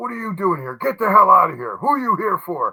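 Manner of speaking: put-on high yell. Retelling how a man at the room's back spotted the speaker: imitating someone yelling. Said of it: "He starts yelling at me".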